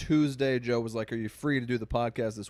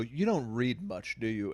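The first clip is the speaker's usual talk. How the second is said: slow, solemn, earnest, serious tone. Retelling what a guy said to the speaker while laughing at him: mock-serious tone. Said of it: "In a serious tone of voice".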